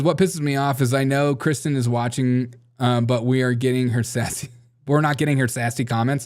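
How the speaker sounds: ordinary talk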